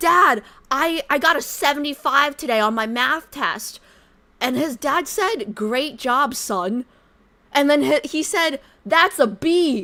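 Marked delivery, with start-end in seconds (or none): 0.0-3.8 put-on loud, high, screaming little kid voice. Retelling a kid on the train yelling to his dad, imitating a kid screaming. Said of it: "He was screaming at his parents".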